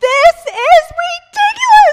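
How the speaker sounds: full-on yell, very high, very loud and shrill. Recounting what she yelled before throwing things, retelling her own yell. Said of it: "and I yell".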